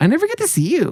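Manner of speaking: odd, weird, very high cutesy voice. Retelling what an ex-girlfriend always said: imitating a weird high-pitched cutesy voice. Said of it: "in, like, a weird way".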